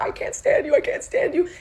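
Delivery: high, frantic, hysterical crying wail. Retelling detonating at a doctor after hearing someone quit; retelling own screaming. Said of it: "I'm screaming".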